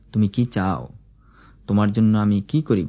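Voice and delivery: ordinary talk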